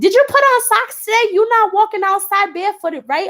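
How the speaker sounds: very high-pitched motherly voice. Retelling how the husband's mom checks in about socks: imitating husband's mom. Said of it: "she be like".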